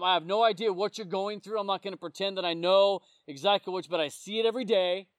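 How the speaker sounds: usual speaking voice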